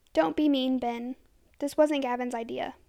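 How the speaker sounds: plain reading voice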